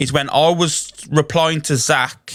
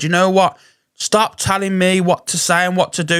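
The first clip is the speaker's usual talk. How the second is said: irritated, angry, fed-up outburst; 4 semitones higher than usual. Retelling a live stream outburst: retelling own shout. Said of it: "I literally sh-, shouted out".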